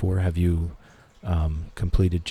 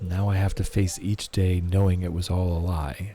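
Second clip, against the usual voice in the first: ordinary delivery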